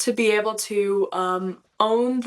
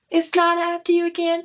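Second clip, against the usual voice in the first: nice and easy, relaxed, effortless, slightly high voice; 9 semitones higher than usual. Speaker demonstrating a character they play, in an easy, relaxed character voice. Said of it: "nice and easy".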